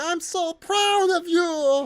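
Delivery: high drawn-out gargling voice. Retelling a movie scene, quoting Kamek, in a dry gargling Kamek voice. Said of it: "it's a dry gargle".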